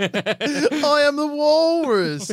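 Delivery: very high, very slow, drawn-out voice that fades away. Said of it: "I had a [name] voice, but it's gone".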